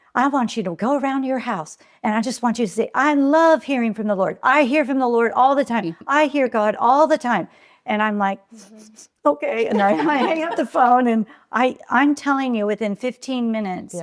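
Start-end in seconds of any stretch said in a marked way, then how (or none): 0.1-7.4 put-on Southern-accented voice. Speaker retells a woman's advice to her on the phone, imitating a real Southern accent. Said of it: "she had a real Southern accent".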